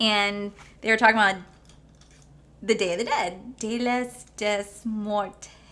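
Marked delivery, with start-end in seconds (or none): 3.6-5.5 slow, heavy American accent on Spanish words.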